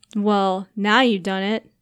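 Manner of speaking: playfully threatening, mock-dangerous tone. Teasing her after she calls him too good-looking, in a mock-dangerous tone. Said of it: "he said in a mock dangerous tone".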